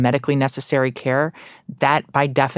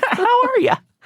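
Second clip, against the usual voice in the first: very high-pitched, down-home folksy voice; 4 dB louder than usual. Imitating own future greeting in the elevator: folksy tone. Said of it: "In that folksy tone".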